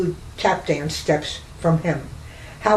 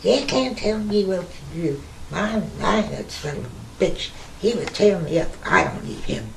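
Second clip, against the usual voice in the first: put-on woman's voice, done to perfection; 4 dB quieter than usual. Speaker acts out what a woman would say, imitating a woman. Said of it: "I can imitate her perfectly".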